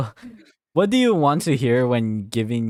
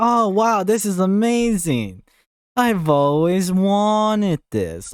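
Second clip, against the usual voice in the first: thick, dripping sarcasm, gushing and pitched up; 9 semitones higher, 3 dB louder than usual. Showing a reply to an anniversary gift, very sarcastic. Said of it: "you can be so sarcastic with it's like".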